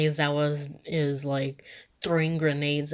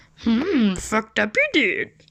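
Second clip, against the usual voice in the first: animated, high, loud, swooping sing-song comic voice; 7 semitones higher, 7 dB louder than usual. Showing off a Yoda voice. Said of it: "I can also make Yoda's voice".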